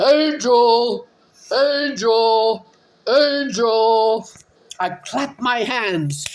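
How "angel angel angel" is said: put-on man voice, drawn-out yell. Searching the yard for the dog, the speaker acts out yelling its name: retelling a yell in man voice. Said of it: "yelling Angel's name in my man voice".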